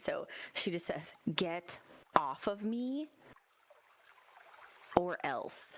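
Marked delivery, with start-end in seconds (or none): 1.3-5.8 slow whisper full of anger. In a role-play, [name] whispers back to Quinn, whose face is close, in an angry whisper. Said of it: "[name] just whispers back in a very um obviously she's angry".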